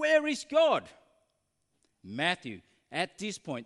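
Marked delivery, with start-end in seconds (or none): 0.0-0.9 very loud, high, shrill repeated shouting. Telling a story, the speaker repeats a minister's question to a terrified boy: raised voice. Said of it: "raised his voice".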